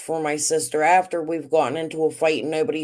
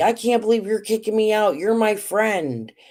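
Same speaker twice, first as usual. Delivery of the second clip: hurt, high, indignant, upset protesting tone; 5 semitones higher than usual. Retelling a woman refusing to leave the speaker's house, imitating her yelling. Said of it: "She's yelling at me".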